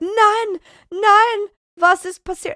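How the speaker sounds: dismayed, shrill, very high German outcry. Retelling the cat climbing higher, imitating dismayed german firefighters. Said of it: "all of the German firefighters are like".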